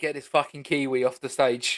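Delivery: ordinary delivery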